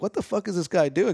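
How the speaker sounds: acted, annoyed, angry exclamation. Retelling how they reacted to a bothersome guy: imitating being pissed off. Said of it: "getting pissed".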